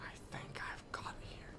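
soft, unvoiced whisper.

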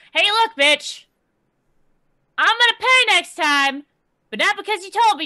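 shouting down. Voicing a character safe from drowning, yelling down: yelling down. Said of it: "she's going to start yelling down".

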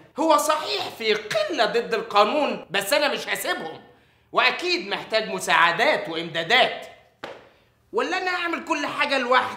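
angry, worked-up defiant tone. Arguing with the officer, who tells him to calm down and sit: angry. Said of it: "طب لو سمحت اسكت واهدى كده واقعد".

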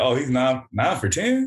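ordinary delivery

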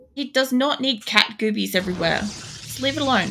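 soft scolding tone.

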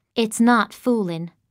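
usual speaking voice

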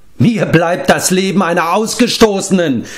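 anguished, high-pitched scream, hurled out. Narrator reading Akrin's reply to Gwydion; screaming. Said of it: "schrie Akrin und wandte sich ab".

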